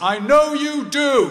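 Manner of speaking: very loud, very high, slow, drawn-out booming call. Retelling the father calling out as the speaker leaves the ward: imitating a loud voice. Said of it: "in a loud voice".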